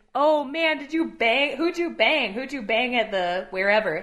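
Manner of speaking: put-on performance-style bellow. Recounting two guys overheard on the stairs down to BART, retelling loud theatrical bellowing. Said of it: "they were bellowing".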